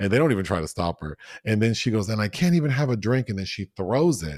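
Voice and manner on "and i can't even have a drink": mock scream, higher and louder. Retelling a character screaming while pouring wine: imitating someone screaming. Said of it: "she's, like, screaming at them".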